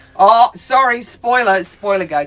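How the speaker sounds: loud, sarcastic tone.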